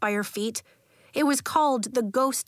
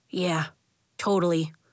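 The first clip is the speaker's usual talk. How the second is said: ordinary delivery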